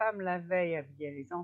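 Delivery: ordinary delivery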